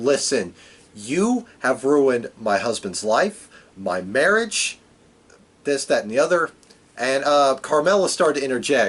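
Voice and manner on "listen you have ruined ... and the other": usual speaking voice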